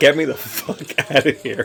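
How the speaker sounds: put-on annoyed, fed-up attitude. Voicing a person in a video who looks unexcited: put-on annoyed attitude. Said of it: "his attitude is like".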